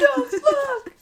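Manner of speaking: put-on panicked scream. Retelling a panicked scream when tarot cards spilled out: imitating dad screaming. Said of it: "screaming and going".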